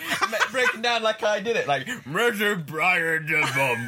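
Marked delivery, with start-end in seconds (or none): 2.1-3.9 slow, grunty delivery. Doing a Bane impression the others asked for: grunty Bane impression. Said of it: "do an impression".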